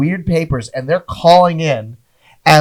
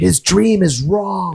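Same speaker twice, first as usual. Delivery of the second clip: mock whispering, higher; 3 semitones higher than usual. Imagining an audience member during a bombing set: imitating a whisper. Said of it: "You hear them whisper".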